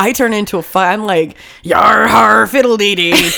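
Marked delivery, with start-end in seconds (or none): 1.6-3.3 put-on pirate voice, louder and slower. Speaker describes how they act on painkillers, doing a pirate voice. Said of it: "Being a pirate is so fun to me".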